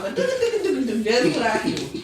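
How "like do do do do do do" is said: high-pitched mock foreign gibberish syllables. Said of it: "that's how they talk".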